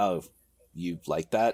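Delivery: put-on disapproving tone. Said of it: "he said it kind of disapprovingly".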